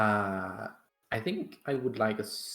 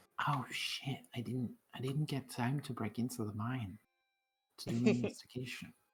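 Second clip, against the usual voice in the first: hushed, half-whispered aside; 6 dB quieter than usual. Speaking in character to the rest of the party: half-whispering to the party. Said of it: "I'm gonna whisper to the party".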